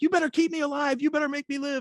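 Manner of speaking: put-on high, insistent, demanding screaming. Retelling screaming at the doctors on arriving at the hospital: retelling a scream. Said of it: "I'm screaming at the doctors".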